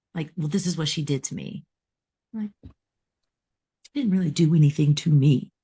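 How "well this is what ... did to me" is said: plain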